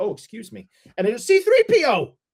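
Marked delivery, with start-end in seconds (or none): 0.0-0.7 put-on plain British-accented English. Retelling a celebrity bumping into him in a crowd: imitating a british accent. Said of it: "He just said in his British ac-, accent".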